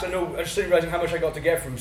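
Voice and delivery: fast, excited rush of words.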